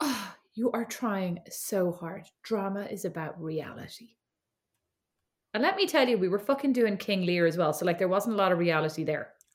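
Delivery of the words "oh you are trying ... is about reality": mock haughty, soft, disdainful and superior condescension. Recalling an older girl in childhood theatre, speaker quotes her, mock-disdainful. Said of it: "she turns around to me with such disdain and goes".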